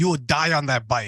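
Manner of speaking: put-on European accent. Retelling what a European spin instructor shouted at the class: imitating a European instructor. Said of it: "she was, um, European".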